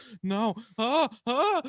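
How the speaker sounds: going all faint with dizzy ahs. Retelling his mom getting faint over no reviews: imitating mom feeling faint. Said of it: "She goes".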